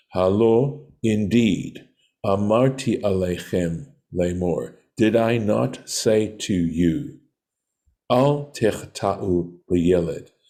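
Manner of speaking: ordinary talk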